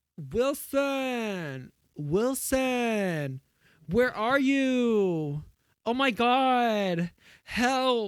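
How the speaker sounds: very high, slow, desperate cry with "you" drawn out. Recalling a scene of calling out for Wilson, the speaker does a Tom Hanks impression. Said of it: "I didn't remember Tom Hanks sounding like that".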